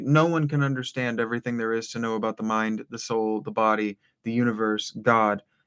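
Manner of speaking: ordinary talk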